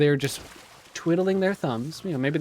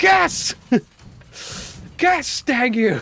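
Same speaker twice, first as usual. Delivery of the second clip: play-acted shrill, insistent, very high aggressive yell; 10 semitones higher, 6 dB louder than usual. Retelling a comedy bit where a man keeps demanding a guess: acting out getting aggressive. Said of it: "He just gets more and more aggressive".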